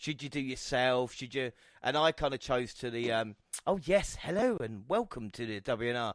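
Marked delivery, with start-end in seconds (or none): 3.7-6.1 fake upper-class posh accent. Recalling an early podcast intro: put-on posh accent. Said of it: "I had my posh accent".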